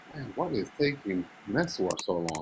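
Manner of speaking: low, hushed voice. Playing a game with friends, the speaker is talking lower now. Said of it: "I'm talking like lower now".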